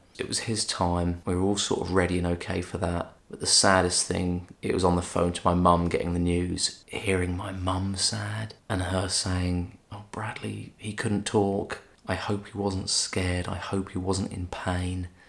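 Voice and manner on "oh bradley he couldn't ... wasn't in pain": normal talking voice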